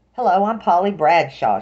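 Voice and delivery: put-on high, loud chattery Boston accent. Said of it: "in a chattery Boston accent".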